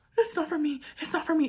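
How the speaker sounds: high-pitched, panicked tone, repeated. Retelling telling a lady the vet light was not for her: imitating her own panic. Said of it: "I, like, panicked".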